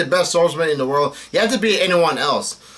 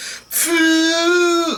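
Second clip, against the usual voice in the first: very high, goofy exclamation. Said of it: "did something goofy".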